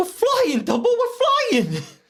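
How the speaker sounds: high cartoon voice, swooping around. Doing an impression while saying a film title: Dumbo character impression. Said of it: "I'm gonna do an impression".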